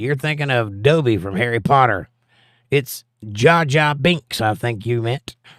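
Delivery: normal talking voice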